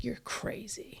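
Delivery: quiet, whispered words. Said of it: "he's saying it all so fucking quiet to me".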